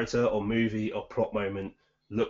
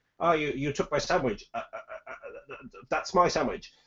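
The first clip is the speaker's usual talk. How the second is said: put-on stutter, higher pitched; 5 semitones higher than usual. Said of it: "stuttering, stammering".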